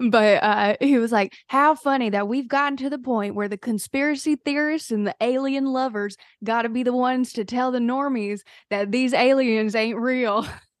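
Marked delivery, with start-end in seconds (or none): 1.5-10.5 put-on tried-on Southern accent. Retelling what a man on a TikTok said, in a put-on Southern accent. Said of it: "So I'll try to do the accent because I am from North Carolina".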